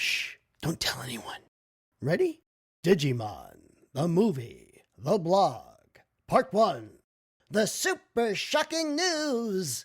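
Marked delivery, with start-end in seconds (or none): 7.5-9.8 silly put-on voice, very high. Reading a blog's titles aloud to listeners, the speaker uses a funny voice. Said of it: "all these funny voices that I do".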